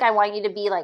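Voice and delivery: normal talking voice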